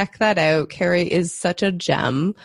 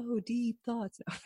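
put-on, sarcastic, mock-impressed tone; 4 semitones higher, 15 dB quieter than usual. Making fun of the self-help world, in a put-on sarcastic tone. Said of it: "my sarcastic voice goes".

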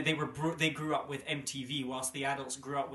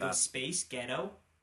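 put-on American accent; 3 dB quieter than usual. Testing a pun with a co-speaker, saying it in an american accent.

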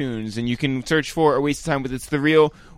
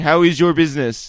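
put-on stilted Israeli accent; 4 dB louder than usual. Act out Lior Cohen questioning people who don't have business, in Lior Cohen's stilted Israeli accent. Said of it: "stilted Israeli accent".

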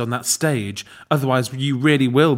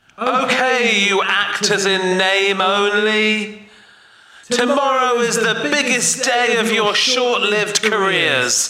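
high, stretched shout, as if through a bullhorn; 8 semitones higher than usual. Addressing the actors about tomorrow's performance, bullhorn voice. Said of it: "should we try and do that sound again".

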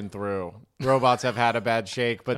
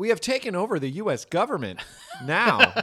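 synthetic app voice, higher; 8 semitones higher than usual. Acting out robots taking over the government: TikTok text-to-speech voice. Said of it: "They're gonna all be that TikTok voice".

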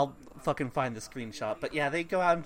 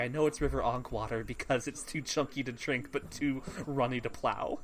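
ordinary talk, nothing marked

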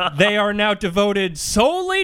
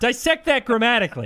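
ordinary talk

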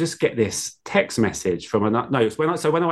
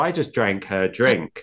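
usual speaking voice

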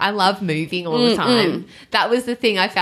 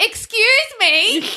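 loud, very high raised voice, put-on; 4 dB louder than usual. Retelling saying excuse me to a woman at the gym, in a loud voice. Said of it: "in a loud voice".

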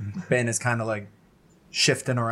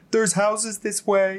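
put-on booming, high-pitched little boy voice; 9 semitones higher than usual. Voicing a character whose little boy voice booms out of a snowstorm: booming little boy voice. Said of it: "his little boy voice, just booms out of the snowstorm".

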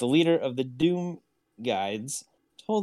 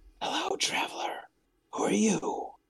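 hushed, under-the-breath whisper; 9 semitones higher, 4 dB quieter than usual. Narrating, voicing a chained cloaked figure who points at a traveler and whispers. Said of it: "points at Weth and whispers".

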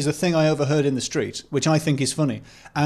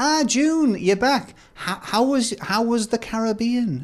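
put-on old lady voice, much higher, slower; 7 semitones higher than usual. Telling of two old ladies passing, one greeting the other, in an old lady voice. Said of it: "so I'm going to do the same voice".

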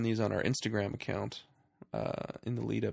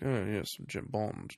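cool, suave secret-agent voice. Describing how an actor usually sounds: imitating Daniel Craig's suave Bond voice. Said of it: "his suave Bond voice".

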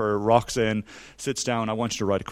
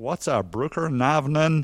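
put-on Texas drawl; 4 semitones higher than usual. Speaker retelling confusion over a Norwegian login prompt, in an attempted Texas drawl. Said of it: "I'm going to try and do my Texas drawl".

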